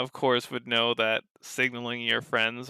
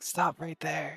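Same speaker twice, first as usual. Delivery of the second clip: high, urgent, hushed half-whisper with no voice; 5 semitones higher, 4 dB quieter than usual. Playing an angel halting another character as she moves in, half-whispering. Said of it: "He like whispers".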